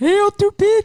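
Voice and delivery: put-on Haitian-accented speech. Retelling how everyone goes amen and then he speaks up, do his line in a Haitian accent. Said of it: "in his Haitian accent".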